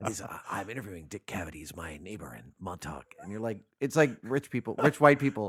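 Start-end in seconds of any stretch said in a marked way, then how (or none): 0.5-3.0 very low, hushed, deep raspy voice. Imitating a radio host interviewing his neighbors: raspy Alec Baldwin voice. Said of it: "he's got that great raspy voice. He talks like this".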